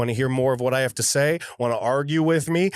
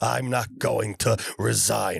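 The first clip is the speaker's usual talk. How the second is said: rough, terrible rasp; 3 semitones lower, 3 dB quieter than usual. Imitating Cuomo doing an Al Pacino impression: terrible Al Pacino impression. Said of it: "That's a terrible Al Pacino impression".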